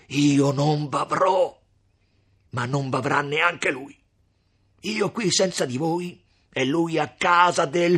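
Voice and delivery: very loud, high, frantic, distraught shout. He cries out to the women, distraught shouting. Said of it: "gridò Renzo con un viso più che mai stravolto".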